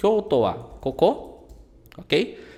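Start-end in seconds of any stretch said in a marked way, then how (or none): 0.0-1.4 rising pitch lifted on koko. Teaching the informal way to say Kyoto wa koko: rising at the end of koko. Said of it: "fala isso numa entonação de pergunta".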